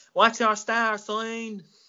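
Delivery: put-on odd Irish woman's accent. Retelling what a lady asked them: imitating a lady's weird irish accent. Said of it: "In that weird accent".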